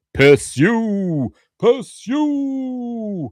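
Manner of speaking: "pursue" drawn out slowly at very high pitch. Reading out an official UFO page, breaking into a Garak impression. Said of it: "that's my impression of um, Garak".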